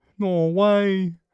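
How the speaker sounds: "norway" said in a Queensland accent. Speaker repeats a word that came out sounding odd; Queensland-accented "Norway". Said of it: "I sounded like I said no way with an accent".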